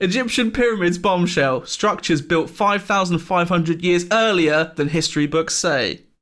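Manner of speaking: read aloud while cracking up laughing. Reading a newspaper headline aloud: laughing while reading. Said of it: "I can't read this out without laughing".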